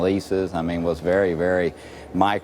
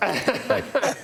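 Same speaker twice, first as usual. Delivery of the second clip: heavy sarcasm, pitched way up. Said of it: "I'm detecting a hint of, uh, of, of sarcasm there".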